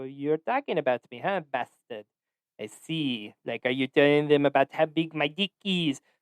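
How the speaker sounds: obnoxious, smug, condescending, full-of-himself voice. Demonstrating the voice of a character who cares only about himself, condescending and obnoxious. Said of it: "like a condescending like prick".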